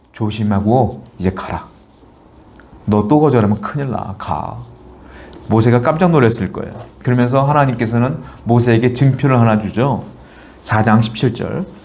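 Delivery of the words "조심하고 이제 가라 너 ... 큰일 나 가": hushed, quiet, low, menacing, threatening voice. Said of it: "제가 무섭게 말씀했을 것 같아요. 조용히, 저음으로".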